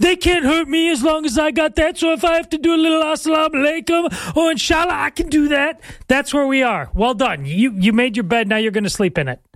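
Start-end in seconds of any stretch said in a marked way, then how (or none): 0.0-6.9 very high-pitched, put-on New York accent. Speaking as a New Yorker character, in a New Yorker accent impersonation. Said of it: "That's a pretty good New Yorker impersonation".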